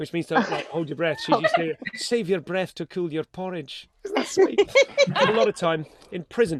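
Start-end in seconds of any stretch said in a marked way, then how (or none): 2.0-3.9 put-on Scottish-accented speech. Host quoting a little Scottish granny's old saying, Scottish accent. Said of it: "you have to do your Scottish accent now".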